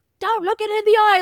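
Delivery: put-on, very high-pitched yelling. Recounting a scene where he yells at M and Angel, retelling a yell. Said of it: "He's like yelling at M and Angel".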